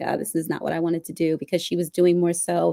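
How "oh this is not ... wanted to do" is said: mock mumbling under the breath, quieter. Retelling how a coworker reacted to doing trial litigation, retelling a mumble under breath. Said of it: "mumbled under her breath".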